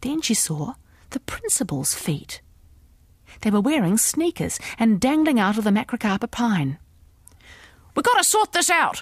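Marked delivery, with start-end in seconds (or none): 8.0-9.0 raised, high, loud yelling shout. A woman yells up at the principal who is hiding up in a pine tree. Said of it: "she yelled".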